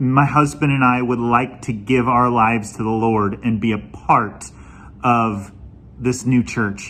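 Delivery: ordinary delivery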